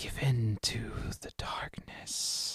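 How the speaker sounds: slow, eerie, chilling whisper. Voicing a presence speaking in a player's head: chilling voice. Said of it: "chilling voice in your head".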